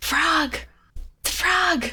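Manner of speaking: high-pitched stage-whispered aside. A player in the game speaks in character, in a whisper. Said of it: "I'm gonna just like whisper".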